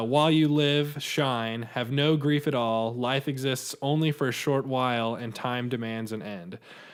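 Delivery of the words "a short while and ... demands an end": ordinary talk, nothing marked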